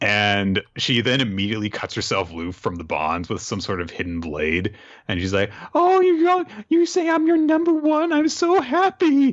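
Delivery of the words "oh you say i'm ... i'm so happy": put-on very high, drawn-out, weepy happy sobbing. Retelling a story, a freed captive speaks to her captor, mock happy crying. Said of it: "turns out she's crying in happiness".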